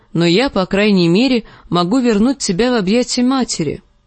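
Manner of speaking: ordinary delivery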